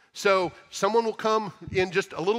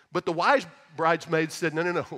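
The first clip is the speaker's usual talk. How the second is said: ordinary talk, nothing marked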